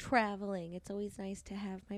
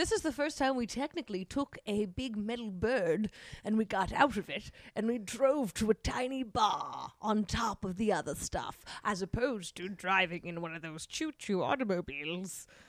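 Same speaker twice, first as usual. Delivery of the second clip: haughty, arrogant, put-on old-fashioned English accent. Friends chatting about a trip, one putting on an arrogant old English voice. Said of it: "putting on like this old English arrogant voice".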